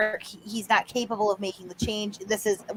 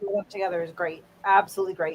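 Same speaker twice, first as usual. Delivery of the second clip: mock, laid-on-thick, heavy dripping sarcasm; 2 semitones lower, 5 dB quieter than usual. Replying to another speaker about two people: heavy sarcasm. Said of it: "I'm saying that with heavy sarcasm".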